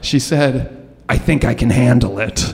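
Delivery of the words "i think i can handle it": gravelly, cigarette-worn, raspy smoker's voice. Retelling what a substitute teacher said: imitating a raspy smoker's voice. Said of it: "in this voice that sounded like she just ate a pack of cigarettes".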